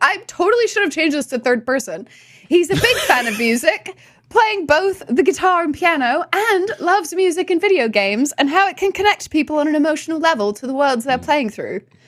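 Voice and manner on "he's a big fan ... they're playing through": put-on British accent, higher. Reading a guest's introduction aloud: british accent. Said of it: "reading about me in a British accent".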